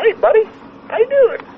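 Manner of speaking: very high, cartoonish salesman voice. Speaker retells a car dealership guy calling him up, in a cartoony salesman voice. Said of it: "like your cartoony voice".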